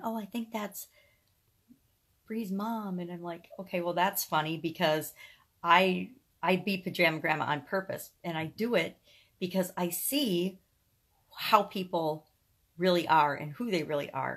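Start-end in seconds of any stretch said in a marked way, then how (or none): 0.0-3.0 soft, hushed half-whispered aside. Retelling how a coworker reacted on finding out: imitating someone half-whispering.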